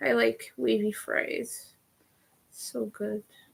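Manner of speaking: soft, creaky, words dragged through vocal fry. Chatting to you guys, speaking with vocal fry. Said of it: "I said that with vocal fry".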